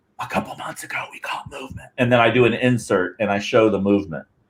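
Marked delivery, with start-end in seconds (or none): 0.2-1.9 soft unvoiced whisper. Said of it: "I'm whispering to you saying".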